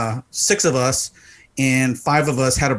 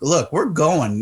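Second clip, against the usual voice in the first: fed-up, irritated brush-off tone; 3 semitones higher than usual. The speaker retells refusing a woman who kept asking for a dollar, retelling his own annoyance. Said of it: "Now I'm getting pissed off".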